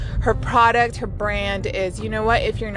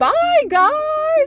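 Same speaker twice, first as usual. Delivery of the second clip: put-on very high Valley girl voice, guys stretched; 5 dB louder than usual. Describing how a valley girl talks, imitating her: super high-pitched valley girl voice. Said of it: "like just super high pitch".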